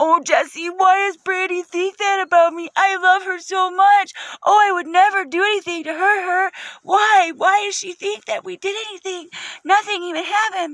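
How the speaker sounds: mock, very high, tearful blubbering sobs. Speaker retells a man coming back to the house crying, imitating someone crying. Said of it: "he comes back and he's crying".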